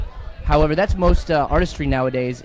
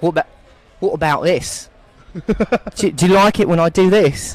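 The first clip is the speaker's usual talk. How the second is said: put-on Australian accent turning British, louder, higher; 3 semitones higher, 5 dB louder than usual. Asked whether they can do an accent, speaker tries one out: australian accent drifting british. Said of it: "I believe that morphed into British, but it was still Australian".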